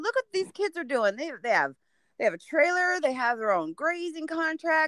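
high-pitched, scolding dad voice. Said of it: "And I said".

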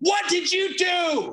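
put-on shrill, very high, stretched, drawn-out shout. Retelling how a man reacted to the damaged instrument, retelling a yell. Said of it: "he like starts yelling".

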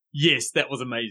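plain

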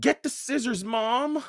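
very high, piercing, shrill yelling. Mallory yells to her mom after a fight with Jared: yelling. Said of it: "Mallory yelled".

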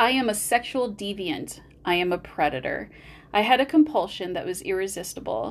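ordinary delivery

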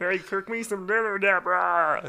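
loud, high calling voice. Asked for his favorite impression: Ray Romano impression. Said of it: "my favorite impression? One because it pisses off my wife is Ray Romano".

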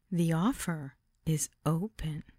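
very slowly spoken, each word stretched out. Reading a story where a woman makes an offer: said very slowly. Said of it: "she said very slowly".

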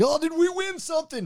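mock very high goofy voice, laughing through the words. Retelling a confrontation where the man laughs it off: imitating him laughing while talking. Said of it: "he starts laughing, like".

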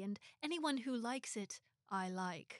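slow, drawn-out, put-on English accent. Retelling what an actor said after praising a hat: good Hugh Grant accent. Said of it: "That was a good accent".

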